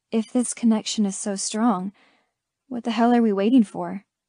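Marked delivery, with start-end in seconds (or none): none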